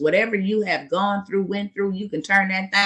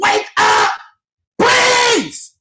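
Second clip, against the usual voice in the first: very high, impassioned, passionate screaming shout; 8 dB louder than usual. Speaker telling listeners how they get when passionate, screaming. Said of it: "I start screaming".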